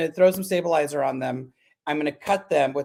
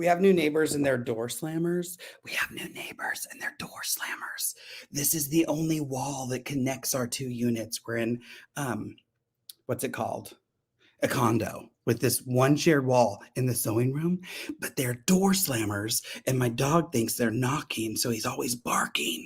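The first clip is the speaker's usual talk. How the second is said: hushed, breathy whisper under the breath; 4 semitones lower, 7 dB quieter than usual. Speaker talks beside a wall shared with new neighbors, whispering. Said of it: "I'm whispering just in case there's not good insulation".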